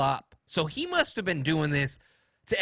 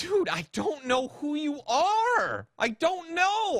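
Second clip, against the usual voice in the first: acted, very high, drawn-out pleading voice; 12 semitones higher than usual. Recounting pleading with a man who confronted them, retelling an exaggerated plea. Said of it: "plead with him in the most pleading voice".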